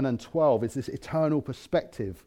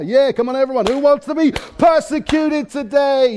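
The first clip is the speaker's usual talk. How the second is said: put-on American accent, pitched up; 11 semitones higher, 8 dB louder than usual. Asking everyone a joking question with a big grin: put-on American accent.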